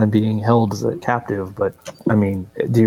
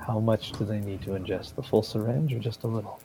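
hushed, half-whispered, barely audible; 13 dB quieter than usual. A player in character, replying to the woman who just spoke, half-whispering. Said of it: "I'll whisper".

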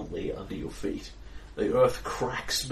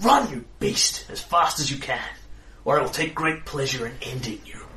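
words hissed out with hatred; 3 semitones higher, 3 dB louder than usual. Narrating a warrior woman threatening you as she reaches for her weapon, hissing. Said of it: "she hisses at you".

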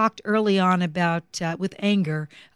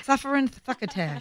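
put-on lisping cartoon duck voice, pitched much higher; 6 semitones higher, 5 dB quieter than usual. Telling of a childhood dream, the speaker breaks into a lisping Daffy Duck voice. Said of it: "Daffy Duck".

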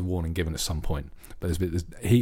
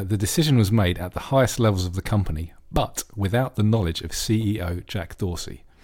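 normal talking voice

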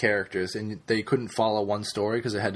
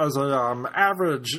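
silly felt-puppet character voice; 5 semitones higher, 3 dB louder than usual. Talking about Woodbury, speaker tries a nerd voice that comes out as Muppet voice. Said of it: "This is like a Muppet voice".

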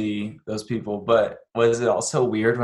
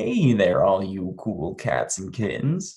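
swooping, sing-song put-on voice; 2 semitones lower than usual. Trying the famous greeting again: Carole Baskin impression. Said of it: "let me try again".

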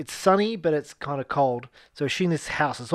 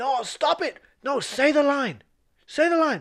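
acted scream, higher; 11 semitones higher than usual. Retelling how the director screams at actors from the village: imitating a director screaming. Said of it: "he'll just scream from the village".

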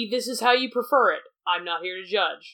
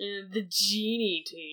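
sneering voice, much quieter; 6 dB quieter than usual. Showing how the group's name could sound insulting: sneering voice. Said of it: "if you say it in a really sneery voice".

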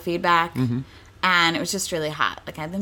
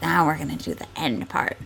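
dark, foreboding, ominous tone; 3 semitones lower, 3 dB quieter than usual. Retelling what they said when the scene called for it, in an ominous tone. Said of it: "the scene called for some ominous tone".

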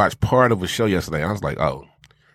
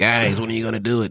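assumed, put-on pleading, begging voice; 3 semitones higher than usual. Voicing Dave's repeated begging, in a Dave voice. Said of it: "I'm just doing a Dave voice".

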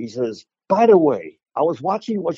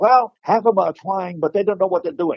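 put-on speech impediment, higher pitch; 5 semitones higher than usual. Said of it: "I've got my little imitation of Bruce".

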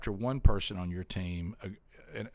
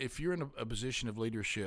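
plain

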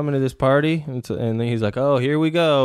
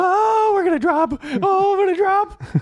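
squeaky, very high, scared cry. Comparing it to roller-coaster fear, the speaker acts it out: mock-scared on a roller coaster. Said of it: "afraid of a fucking roller coaster".

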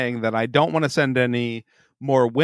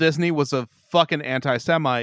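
ordinary talk

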